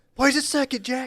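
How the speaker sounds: put-on aggressive yelling. Imitating over-aggressive parents heard from the fields: imitating over-aggressive parents yelling. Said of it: "over-aggressive parents".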